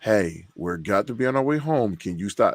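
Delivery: ordinary delivery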